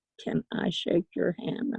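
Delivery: ordinary delivery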